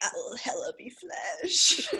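put-on whispered, breathy California accent in demon-like voice. Retelling what she said, quoting her line: California demon accent. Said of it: "California demon accent".

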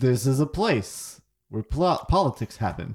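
put-on Russian accent with sports-commentator delivery. Working out a realistic, less-fantasy voice: half Russian, half sports commentator. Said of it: "halfway between like Russian and like a sports commentator".

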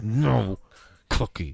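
put-on speech through clenched teeth. Retelling a scene, quoting her refusal to him: retelling words through teeth. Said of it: "Through her teeth".

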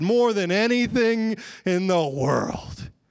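slow, sarcastic, pretend-willing tone. Acting out a reply to God: imitating own sarcastic reply. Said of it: "I sarcastically respond back to God".

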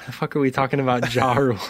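mock confused, disbelieving reaction. Retelling mishearing a name over a bad connection: retelling own confused reaction. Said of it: "And I was like".

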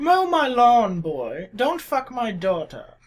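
high, snooty New England voice through clenched teeth. Showing how the voice is done after explaining it, talking through the teeth. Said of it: "talk through your teeth to make it convincing".

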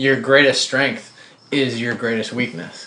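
ordinary talk

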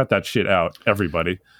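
ordinary delivery

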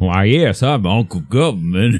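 put-on Southern plantation owner voice. Riffing on a recurring bit, speaking as Uncle Government, Uncle Government voice. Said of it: "I talk like a Southern Plantation owner".

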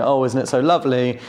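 ordinary delivery

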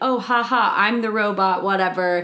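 acted, light, breezy chuckle, laughing it off. Retelling how a character acts in the diner scene: imitating someone laughing it off. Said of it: "laughing it off about everything".

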